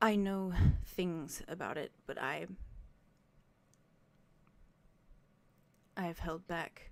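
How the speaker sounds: mild, tender, careful, gentle delivery. Speaking in character to another player: very soft voice. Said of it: "and just very softly says".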